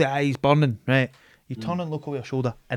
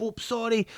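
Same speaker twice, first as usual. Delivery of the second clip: timid, submissive, meek, soft, pitched-up voice; 8 semitones higher, 7 dB quieter than usual. Retelling ducking one's head down to let people pass: imitating a submissive apology. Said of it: "I'm very submissive".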